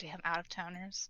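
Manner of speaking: grumbling under her breath. Voicing a server walking back to the bar, muttering under her breath. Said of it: "you hear her mutter under her breath".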